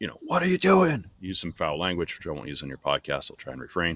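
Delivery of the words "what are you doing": very high, shrill, loud shrieking scream. Retelling how a training officer screamed at them: imitating someone screaming. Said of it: "screams at me".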